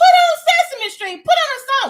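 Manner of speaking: exasperated, frustrated yelling.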